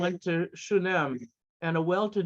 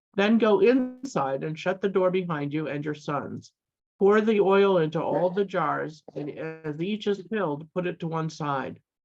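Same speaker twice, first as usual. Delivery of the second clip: ordinary talk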